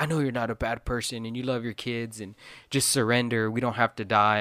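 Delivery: mock earnest, imploring, pleading and begging tone. Retelling a show character's plea to a queen to surrender: imitating someone pleading. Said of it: "pleading with her".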